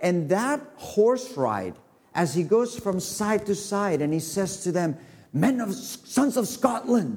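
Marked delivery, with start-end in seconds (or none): 5.3-7.2 put-on Scottish accent, pitched up. Retelling a leader's words to his men while riding along them, in a scottish accent. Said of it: "is that a good accent or no?".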